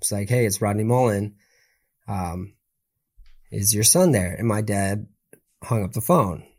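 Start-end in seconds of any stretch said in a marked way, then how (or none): 0.3-4.3 calm, subtle, low-key and understated voice. Retelling a phone call the speaker's dad answered: imitating Rodney Mullen's calm, subtle voice. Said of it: "who has very calm, like very subtle voice".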